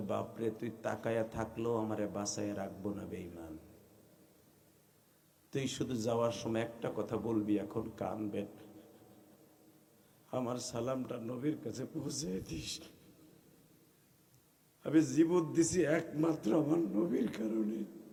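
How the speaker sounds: tender, soft, low, hushed voice.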